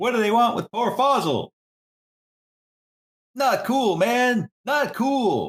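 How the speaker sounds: put-on hollering, very high, yelled-out cry. Voicing a collapsing character calling out to his troops: yelling out in character. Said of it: "he's just gonna yell out".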